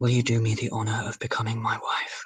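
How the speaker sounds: soft, hushed, whispery voice. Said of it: "he's kind of whispery".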